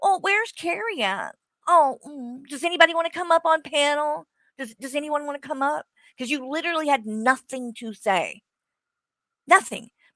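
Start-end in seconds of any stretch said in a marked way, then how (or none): 0.0-5.9 high, wheedling, scornful pleading tone. Retelling how the livestreamer invited her onto the panel: mocking imitation. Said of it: "he'd be like".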